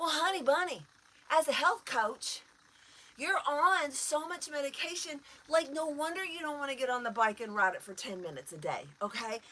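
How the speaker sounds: high, mocking, patronizing sarcasm. A health coach addressing a heavily medicated client, sarcastic. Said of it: "I'm being sarcastic, because I am".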